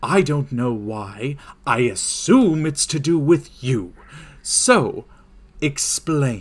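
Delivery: furious, fed-up, angry voice. Voicing the NPC Philip, furious, demanding an explanation: Philip angrily demanding an explanation. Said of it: "he just turns over and looks and just goes".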